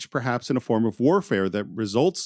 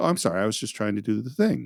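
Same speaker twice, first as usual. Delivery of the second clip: mock-polite, put-on polite voice. Describing a patient in the nurse's station, retelling his polite apology. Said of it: "And he's totally polite".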